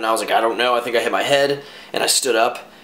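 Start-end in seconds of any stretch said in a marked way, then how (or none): none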